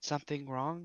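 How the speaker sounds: soft-spoken. Voicing a D&D character for the group, in a soft voice. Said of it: "Soft voice".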